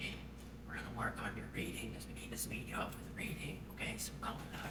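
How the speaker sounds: soft, hushed whisper. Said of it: "they bend over and they whisper".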